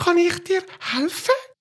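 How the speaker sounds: very high, cheerful, chirpy twittering bird voice. Reading a story aloud, voicing a little sparrow in a funny chirping voice. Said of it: "eine lustige Stimme zwitschert".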